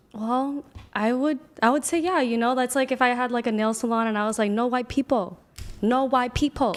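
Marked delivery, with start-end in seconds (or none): 4.6-6.8 put-on Vietnamese accent. Acting out a nail salon owner refusing customers: imitating a vietnamese accent. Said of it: "with that accent? The Vietnamese?".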